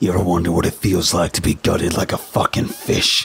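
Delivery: swooping, demonic-sounding hissed voice. Standing with his foot on the narrator's face, the attacker speaks: hissing demonic voice. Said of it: "He hissed in a demonic-sounding voice".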